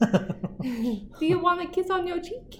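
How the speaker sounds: very high, cutesy pet-talk voice. Asking the other person questions in the voice used for talking to a dog. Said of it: "That's the same exact voice I use for Millie".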